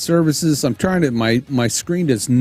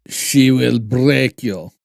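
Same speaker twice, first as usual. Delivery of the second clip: put-on terrible, unconvincing Russian accent; 3 semitones lower than usual. Joking after thanking someone for stopping by: terrible russian accent. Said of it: "That was terrible Russian accent there".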